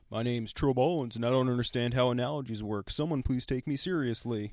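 derisive, mocking impersonation voice. Teasing the other speaker over a bad analogy, mocking Trill Bowens impression. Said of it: "That's my impersonation of you".

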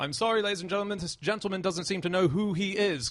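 high, loud, mock-polite shouting.

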